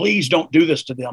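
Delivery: plain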